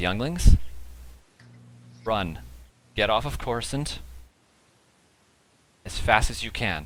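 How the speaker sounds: calm but stern, firm voice. Voicing a teacher warning the younglings to flee: calm but stern voice. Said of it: "very calmly, but with a very stern type of voice".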